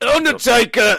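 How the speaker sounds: put-on high, loud, belted northern English accent. Saying the line on a partner's cue, as the Undertaker, northern English accent. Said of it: "Why am I from the north?".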